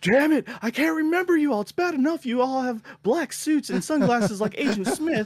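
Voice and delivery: put-on yelling rant, pitched way up. Retelling a scene where the boss scolds his men: imitating a character yelling. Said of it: "he's all yelling at them".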